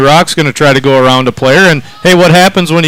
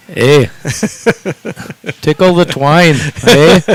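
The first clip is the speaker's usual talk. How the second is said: put-on Canadian accent. A hockey broadcaster celebrates a goal in a Canadian accent. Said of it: "Do it in your best Canadian voice".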